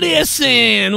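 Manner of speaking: "listen" drawled out, southern style. Imitating how Jim Ross says listen, Jim Ross southern accent on listen. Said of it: "with his weird, with his southern accent".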